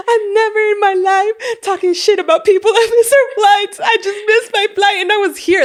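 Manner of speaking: high, weepy voice, crying through the words. Retelling what a woman said on the phone after missing her flight, imitating someone crying. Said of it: "And she was crying".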